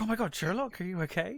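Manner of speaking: play-acted soft, anxious, caring, worried tone. Describing a character genuinely worried for Sherlock, imitating worried concern. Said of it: "he's genuinely worried for Sherlock".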